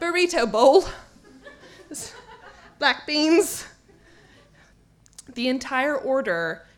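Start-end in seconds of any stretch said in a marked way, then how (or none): 0.0-3.7 fake, put-on British English accent. Retelling ordering food while waiting in line, in a pretend British accent. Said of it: "And so I did".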